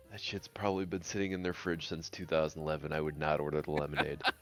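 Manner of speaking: secretive, hushed half-whispered aside. Voicing a character who leans over to someone: half-whispering. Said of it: "lean over and whisper".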